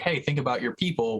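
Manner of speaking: ordinary talk, nothing marked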